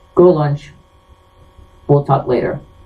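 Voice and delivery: mock-calm, even, steady delivery. Retelling how the school principal told him to go to lunch, retelling a calm principal. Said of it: "real calmly".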